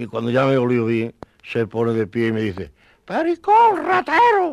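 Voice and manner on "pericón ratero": shrill, very high, loud talking-dog voice. Retelling what the one who sniffed them said, in a dog voice. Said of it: "en voz de perro".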